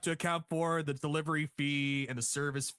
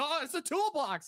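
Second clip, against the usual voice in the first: very high, spooked, freaked-out yelp; 10 semitones higher than usual. Retelling a wrestling scene, imitating Drew McIntyre freaked out. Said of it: "Drew McIntyre's all, like, freaked out".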